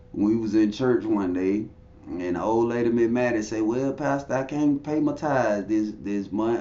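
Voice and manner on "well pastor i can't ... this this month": ordinary talk, nothing marked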